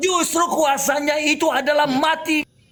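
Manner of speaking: loud shouting, drawn out slowly.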